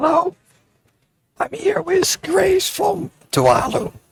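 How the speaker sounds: croaky, worn-out, hoarse rasp at very high pitch. Introducing a guest from Tuvalu at an event, with a lost, hoarse voice. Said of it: "I've lost my voice, therefore I don't talk very loud".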